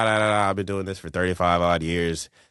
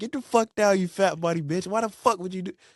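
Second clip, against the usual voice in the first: put-on drill sergeant yell, higher; 13 semitones higher than usual. Retelling what the drill sergeant said at reception: imitating a drill sergeant yelling. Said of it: "He just started yelling this and that".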